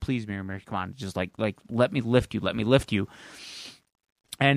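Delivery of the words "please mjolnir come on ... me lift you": put-on whisper, much lower. Retelling a scene where Thor kneels in front of Mjolnir: Thor whispering, acted out. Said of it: "he's like whispering".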